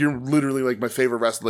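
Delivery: ordinary delivery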